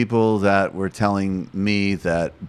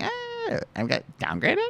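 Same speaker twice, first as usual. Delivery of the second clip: put-on very high, swooping, girly voice; 7 dB quieter than usual. Showing the voice used for quoting women: put-on girl voice. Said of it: "the girl voice".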